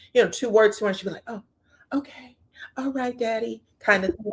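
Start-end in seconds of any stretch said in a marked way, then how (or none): 1.3-3.7 meek, submissive, deferential voice, pitched up. Imitating how Ariane answers Martell: imitating Ariane, mock submissive. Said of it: "really submissive to Martell".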